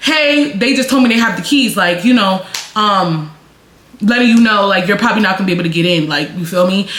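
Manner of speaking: ordinary talk, nothing marked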